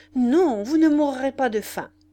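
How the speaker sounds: very loud sudden exclamation. Replying to a man resigned to dying, the narrator cries out. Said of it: "m'écriai-je".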